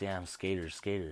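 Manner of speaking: normal talking voice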